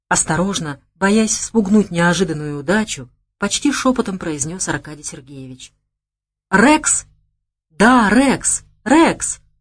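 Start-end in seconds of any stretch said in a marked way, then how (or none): 6.5-9.4 gleeful, triumphant, joyful yelling full of delight. Reading a story, the young man answers Arkady Sergeyevich's guess: joyful yell. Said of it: "завопил радостно парень".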